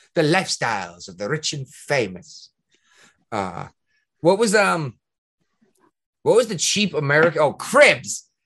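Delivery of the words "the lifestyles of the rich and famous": put-on English accent, announcer-like. Redoing the show's title line after being told to add the accent: Robin Leach English accent. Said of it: "You gotta throw in your English accent".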